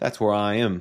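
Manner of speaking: put-on, attempted Canadian accent. Presenter setting up a simple ad in a tutorial video: attempted Canadian accent. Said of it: "I don't know what that accent was. It's supposed to like be me trying to do a Canadian accent".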